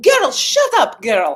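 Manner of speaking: put-on loud voice with Russian accent. Recounting a reaction to surprising news of a won session, imitating a russian friend. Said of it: "I channeled my Russian friend who's always like".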